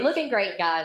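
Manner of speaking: ordinary talk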